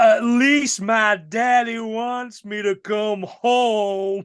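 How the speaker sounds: clumsy, bad Southern drawl, very slow and high-pitched. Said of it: "the Mary Elizabeth Winstead Southern accent thing".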